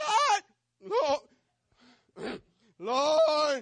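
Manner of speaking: scared high cry. Retelling getting spooked by a noise alone at home: retelling a scared high cry. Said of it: "Because we get scared, my voice goes up".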